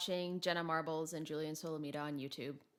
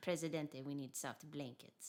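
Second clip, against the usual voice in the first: put-on Russian spy voice, quieter; 7 dB quieter than usual. Told to channel the Russian lady, the speaker plays a Russian spy voice. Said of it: "pretend you're a Russian spy".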